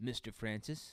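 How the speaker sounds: put-on toneless delivery. Storyteller quoting a little kid's knock-knock punchline, imitating a kid's flat deadpan. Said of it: "without any inflection in his voice".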